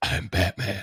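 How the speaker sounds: breathy superhero voice, breathed out. Saying a line the other speaker mentioned: Will Arnett Batman voice. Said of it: "that's Will Arnett?".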